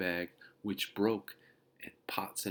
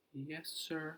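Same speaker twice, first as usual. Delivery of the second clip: tiny little voice, very high and soft; 9 semitones higher, 8 dB quieter than usual. Henry answers the bus driver after his dog got on the bus, in a small voice. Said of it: "said Henry in a small voice".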